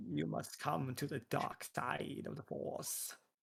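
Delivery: whispered, sinister growl under the breath. Demonstrating the voice another speaker should attempt, in a Palpatine-like growl. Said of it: "Palpatine-like growl".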